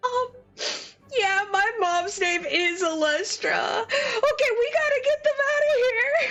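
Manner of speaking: sobbing, crying words, pitched way up. Voicing Will answering about his mom, acting out tearful speech.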